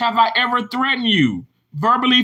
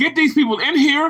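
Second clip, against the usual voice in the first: normal talking voice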